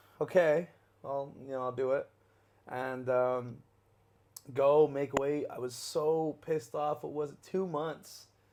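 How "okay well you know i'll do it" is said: hesitant delivery. Retelling agreeing to a fight: imitating a hesitant reply.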